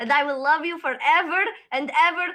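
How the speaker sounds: rising in volume. Game master voicing a woman speaking in a cave, voice getting louder. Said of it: "And her voice is getting louder".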